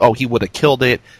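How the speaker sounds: normal talking voice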